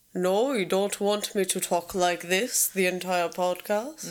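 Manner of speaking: mock deep voice, put on. Podcast host answering her co-host's complaint about it: put-on deep voice. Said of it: "I don't dig the deep voice".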